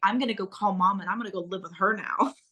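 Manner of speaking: normal talking voice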